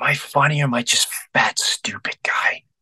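vulnerable, pleading tone. Retelling a late-night phone call from Chris: imitating a vulnerable question. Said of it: "in the most vulnerable way".

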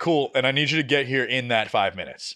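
ordinary talk, nothing marked

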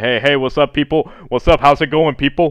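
booming, loud voice filling the room. Describing a man from the office and his morning greeting: imitating his loud greeting. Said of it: "worst thing is that voice".

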